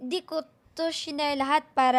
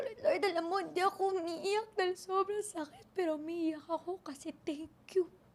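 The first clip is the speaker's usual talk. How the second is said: put-on high, dramatic child voice. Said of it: "may ways talaga ako para gawing dramatic".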